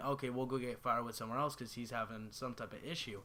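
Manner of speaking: usual speaking voice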